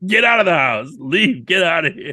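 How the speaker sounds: high, hot-tempered screaming outburst, acted out. Retelling screaming at a guest at christmas: imitating someone screaming. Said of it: "I just started screaming".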